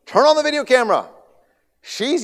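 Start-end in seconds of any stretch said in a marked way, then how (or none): 0.2-1.1 shrill, loud, very high-pitched shouting. Retelling seeing something in the water, calling out to his wife: retelling a yell. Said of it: "I'm yelling to my wife".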